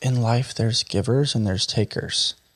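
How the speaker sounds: put-on whispered voice. Retelling a dying father's final words: imitating a whisper. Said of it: "he whispered it and he goes".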